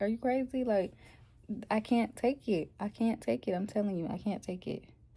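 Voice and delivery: play-acted crying, pleading through tears. Retelling begging the nurse during labor pain: imitating own past crying. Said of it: "I start crying".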